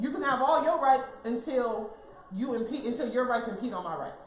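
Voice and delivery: ordinary talk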